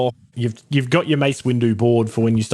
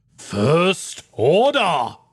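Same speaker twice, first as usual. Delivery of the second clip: loud delivery, a bit higher; 6 semitones higher than usual. Reading capitalised words of a list name on request: saying it loudly. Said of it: "could you just, like, say it loudly?".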